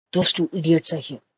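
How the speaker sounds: hushed, whispered aside. Voicing a character warning another about two idiots: whispering. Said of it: "I whisper to August".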